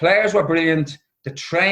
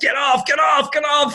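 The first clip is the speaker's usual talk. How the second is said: play-acted, high, shrieking scream; 9 semitones higher than usual. Retelling yelling at majorettes to leave the warm-up: retelling his own scream. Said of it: "So I'm screaming at these majorettes".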